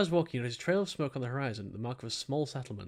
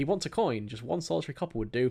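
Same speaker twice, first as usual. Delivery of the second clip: ordinary talk, nothing marked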